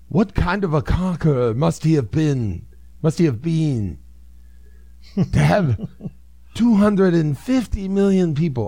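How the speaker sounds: fake British accent.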